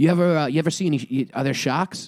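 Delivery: put-on heavy Boston accent, laid on thick. Retelling a surfing chat, voicing the man asking about sharks, thick Boston accent. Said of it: "he's got a real thick Boston accent".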